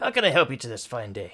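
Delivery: booming dwarf voice. Voicing a dwarf blacksmith greeting a visitor in the smithy: dwarf blacksmith voice. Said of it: "a dwarf about four six".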